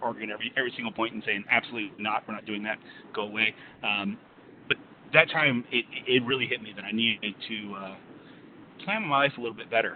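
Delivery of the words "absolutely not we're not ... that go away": normal talking voice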